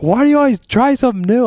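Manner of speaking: high, loud, exasperated whine.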